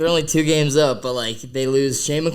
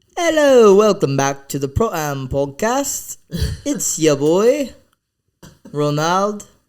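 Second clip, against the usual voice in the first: poor put-on British accent, slipping in and out; 4 semitones higher, 4 dB louder than usual. Asked on a podcast for their best British accent, doing a bad British accent. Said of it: "Give me your best British accent".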